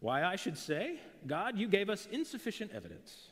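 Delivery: put-on thick, heavily laid-on British accent, pitched high. Imagining Bertrand Russell's reply to God, in a thick British accent. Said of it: "in that like British, you know, thick British accent".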